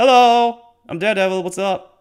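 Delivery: loud, high, casual tossed-off hi. Retelling a game scene where Daredevil suddenly appears: imitating Daredevil's casual greeting. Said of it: "He goes like".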